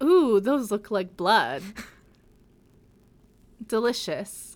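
savouring, hungry, bloodthirsty vampire voice. Retelling a scene where a vampire sees red gloves: imitating Vampire Simon craving blood. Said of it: "Vampire Simon's like".

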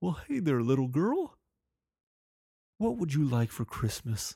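soft, jolly, charming voice. Retelling how a man greeted the speaker's kids, imitating a jolly, charming voice. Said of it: "he goes".

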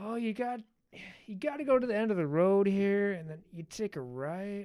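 put-on laid-back stoner guy voice. Retelling a movie scene, a stoner giving the bad guy directions, imitating a stoner guy. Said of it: "He plays just the stoner guy".

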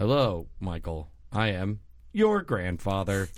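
low, strange voice speaking as a car. Comedian voicing a car calling Michael as his grandfather, strange car voice. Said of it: "Why is he talking like that?".

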